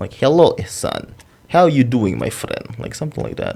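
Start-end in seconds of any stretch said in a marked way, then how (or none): 0.1-2.8 loud, swooping, overdone Lithuanian accent laid on thick. Copying a friend's accent when calling him: exaggerated Lithuanian accent. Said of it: "I'll just copy his accent".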